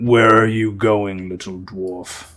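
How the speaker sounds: harsh, throaty, guttural monster voice. A telepathic creature questions a little dwarf in his head, in a guttural voice. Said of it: "this guttural voice ask".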